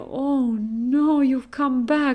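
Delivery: mock crying, slow, tearful and distressed. Recounting coming home, the speaker quotes mom, imitating her crying. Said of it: "started crying".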